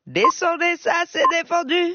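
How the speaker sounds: put-on Creole accent.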